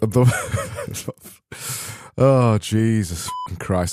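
talking through laughter. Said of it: "I'm laughing at this one before I've even said it".

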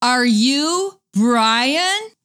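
lightly done, mild mock calling out. Retelling a man asking loudly while the speaker wore earbuds, retelling a loud question. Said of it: "he says really loud".

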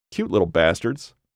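ordinary delivery

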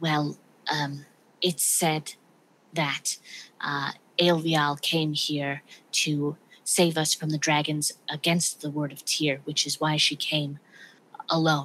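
speaking in hushed tones. Narrator voicing a character who answers a question, in a hushed voice. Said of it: "He sort of speaks in a hushed voice now and says".

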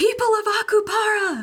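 very high shout, as loud as possible. A player's character calls out to the people of Akupara; yelling. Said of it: "going to yell".

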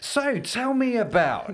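very high, very slow, emphatic podcast host voice. Showing how they question people at the table, in a podcast host voice. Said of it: "I'll even do the podcast voice".

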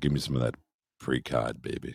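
put-on deep voice. Joking about postcod with co-hosts, asking for precod: put-on deep voice. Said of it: "I'm the deep voice in this goddamn show".

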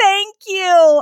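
shouted voice. Retelling a woman's reply at the drive-through, retelling a yelled thank-you. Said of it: "she yelled back".

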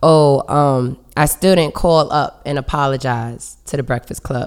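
plain

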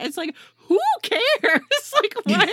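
high, loud, exasperated who-cares scoff.

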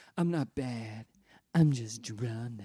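low, tongue-in-cheek, knowingly sexy noir vamp voice. Quoting a performer's line while praising her: mock knowingly sexy. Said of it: "Knowingly sexy".

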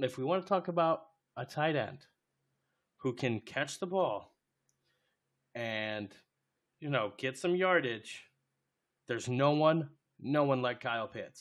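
sarcastic, tongue-in-cheek, not really meant. Speaking to listeners about tight ends and their stats, sarcastic. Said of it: "if you guys didn't hear the sarcasm in my voice".

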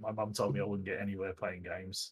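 ordinary talk, nothing marked

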